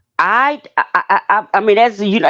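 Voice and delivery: stuttering repeatedly. Speaker struggling to explain someone's actions, stuttering. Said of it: "and I'm stuttering right now".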